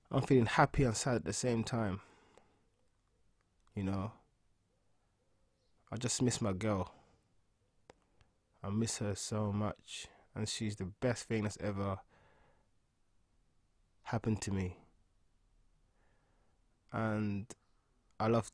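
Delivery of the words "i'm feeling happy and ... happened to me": choked up with feeling, quieter. Saying how much you miss your girl, emotional. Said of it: "I'm feeling so emotional right now".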